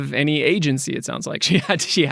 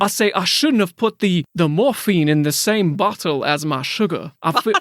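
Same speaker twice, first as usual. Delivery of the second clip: put-on Southern accent in a cartoon rooster voice; 3 semitones higher than usual. Improvising a character in a made-up story with a partner, in a Looney Tunes chicken voice. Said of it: "I'm not sure that's a Louisiana accent".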